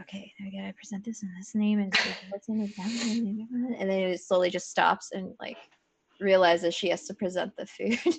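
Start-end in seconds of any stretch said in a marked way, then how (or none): 0.0-2.7 put-on muttering to herself, lower and faster. Describing Alexi wheeling in a food cart, imitating Alexi muttering. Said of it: "muttering like".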